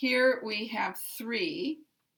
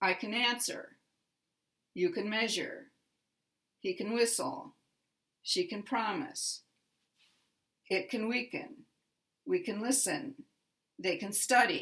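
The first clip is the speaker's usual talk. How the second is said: strong stress on the verb's first syllable. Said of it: "The first syllable is the primary syllable".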